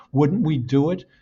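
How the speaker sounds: normal talking voice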